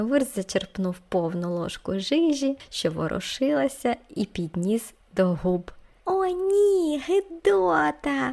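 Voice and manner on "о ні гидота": very high, drawn-out howling wail. The children react as Vurst lifts a spoonful of wriggling jam; wailing. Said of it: "волали діти".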